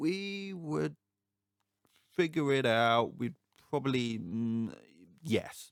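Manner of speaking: very slow, high, hesitant and halting. Retelling a TV character's hesitant answer: imitating a slow reply. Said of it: "he sort of says slowly".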